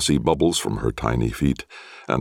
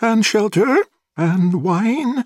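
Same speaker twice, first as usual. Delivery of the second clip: very high, fluty, piping voice; 4 dB louder than usual. A narrator reads Avluella's questions to the Watcher, Avluella's high fluty voice. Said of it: "she asked in her high fluty voice".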